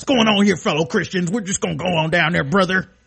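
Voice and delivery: wrestling-ring hype voice, pro wrestler promo style. Joking with another speaker, speaker voices Starbucks' reply sounding like a pro wrestler. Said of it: "He sounds like a wrestler".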